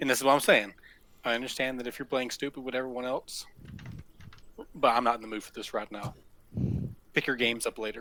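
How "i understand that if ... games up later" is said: leaning-in, soft, low whisper. Speaking in character, leaning in close to another character: whisper. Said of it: "I lean over and I whisper".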